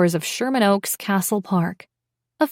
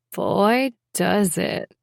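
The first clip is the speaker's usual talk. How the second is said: suggestive voice filled with innuendo, much slower. Narrator reading a woman's reply to a man's greeting, voice filled with innuendo. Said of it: "her voice filled with innuendo".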